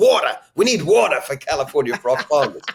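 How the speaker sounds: New Yorker accent. Showing how the word water sounds when said: New York-sounding accent. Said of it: "You almost sound New York there when you do it that way".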